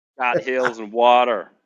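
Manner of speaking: put-on American accent. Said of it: "Was that your American accent?".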